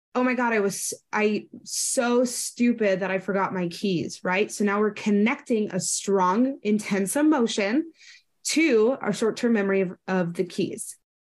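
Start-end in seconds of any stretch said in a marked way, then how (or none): none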